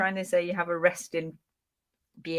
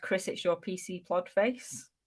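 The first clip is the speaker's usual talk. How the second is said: ordinary talk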